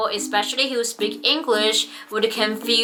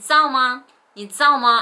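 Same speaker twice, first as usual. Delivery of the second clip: Taiwanese Mandarin accent, 知道 merged to 造; 2 semitones higher, 3 dB louder than usual. Showing how a Mandarin phrase sounds in Taiwan: Taiwanese accent. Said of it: "It's very typical Taiwanese accent phrase".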